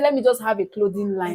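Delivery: ordinary talk, nothing marked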